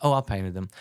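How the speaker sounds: casual, nonchalant, offhand throwaway tone. Retelling a wife's casual answer about paintings: imitating wife's nonchalant tone. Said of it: "Nonchalantly, my wife goes".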